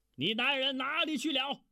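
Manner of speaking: very high, shrill, loud barking shout. The master of the house questions the woman before a guest, barking loudly. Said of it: "便大声喝道".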